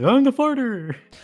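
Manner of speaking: very high, very loud silly squealing voice. Showing the others how the next character, the farter, will sound: farter character voice. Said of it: "He's gonna sound like this".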